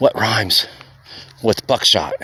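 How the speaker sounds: hushed whisper. Retelling putting an arm around him to ask a riddle: retelling a whisper. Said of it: "I whisper in his ear".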